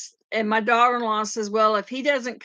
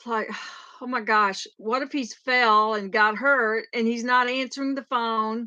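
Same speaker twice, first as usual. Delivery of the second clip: normal talking voice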